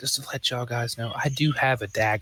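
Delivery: whispered line in a put-on character voice. Warning the party about a hidden dagger in character: whispering in character. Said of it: "So I whisper to the party".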